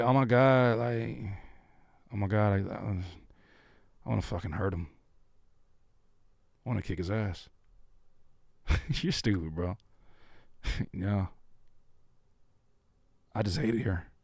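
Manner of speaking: soft, dead level, flat monotone, no feeling. Acting out someone who says angry things with no emotion: mock monotone delivery. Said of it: "like monotone. But like even worse".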